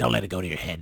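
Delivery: rough, raspy, rasping delivery. Retelling what Paul said about casting the play: Paul's raspy voice. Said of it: "said in his raspy voice".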